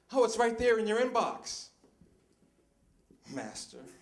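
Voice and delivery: acted-out polite tone, sarcastic sting on "master". Acting out a worker answering the boss, imitating a sarcastic tone. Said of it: "a hint of sarcasm to it".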